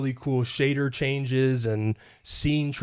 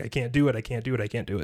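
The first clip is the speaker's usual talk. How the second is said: imitated crying and sobbing; 2 semitones lower than usual. Retelling a game scene where a character can't approach her sister: imitating someone crying and sobbing. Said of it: "She was crying and sobbing".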